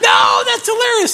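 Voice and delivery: put-on high, loud kid voice, yelling with delight.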